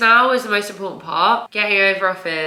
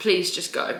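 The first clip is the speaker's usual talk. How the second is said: imitated tearful pleading, quieter; 5 dB quieter than usual. Retelling telling him to leave while she cried: imitating own past crying. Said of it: "I burst out crying and I was like".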